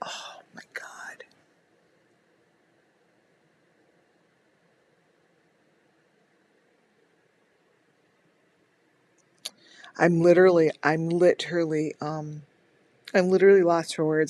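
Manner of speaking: voice straining against tears. Pushing on through an emotional moment while trying not to cry: holding back tears. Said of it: "I'm trying not to, to cry".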